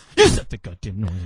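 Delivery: deep, low, angry stage whisper, spat out. Retelling his mother's words to him in church, imitating her angry whisper. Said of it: "My mother had the angry whisper".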